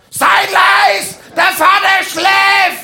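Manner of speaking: high, loud, slow, drawn-out yell.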